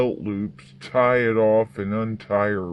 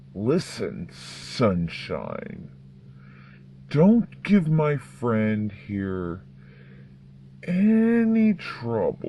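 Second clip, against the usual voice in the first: darkly amused, swooping delivery, any stretched. Narrator voicing the masked man warning a woman: hint of dark amusement. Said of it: "The masked man calmly walks over to her and backhands her hard enough to snap her head back, / Says the masked one with a hint of dark amusement in his voice. / Says the masked one with a hint of dark".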